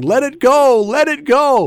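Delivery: acted yell, very high-pitched and very slow, drawn out. Speaker retells a man shouting to him from the bench: Terry Adair yelling, retold. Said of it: "Terry Adair from the bench was yelling".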